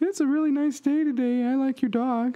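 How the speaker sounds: put-on female voice, pitched very high. Retelling what a date said when first meeting: female voice impression of Janine. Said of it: "if I try to do a female voice impression".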